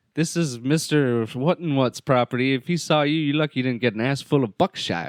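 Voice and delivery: creepy backwoods farmhand voice. Retelling a movie scene, quoting the barn character: imitating a creepy redneck. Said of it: "the creepy redneck dude in the barn".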